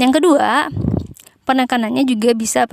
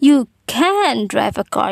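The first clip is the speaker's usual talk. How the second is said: emphatic stress on the word can. English lesson example of emphatic surprise on the modal: stress on 'can'. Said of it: "Jadi dia tekankan pada modal".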